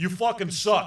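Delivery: blunt delivery in a put-on celebrity voice. Imitating a radio host telling a band they suck: Howard Stern impression. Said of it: "That's a good Stern impression".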